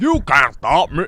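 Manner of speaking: goofy, cocky, taunting cartoon-villain voice. Quoting the cocky Pine Octopus's taunt in a terrible Pine Octopus voice. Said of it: "the voice is terrible".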